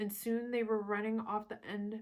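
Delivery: ordinary delivery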